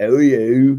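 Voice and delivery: put-on very loud, high, British-accented giant voice. Telling a story, acting out a giant asking the viceroy a question; British-accented giant voice. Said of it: "Why British accent?".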